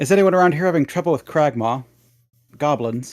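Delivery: loud, high-pitched call. Playing a character in a busy tavern, asking everyone present, raised voice, calling out. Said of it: "I'll raise my voice so people can hear me".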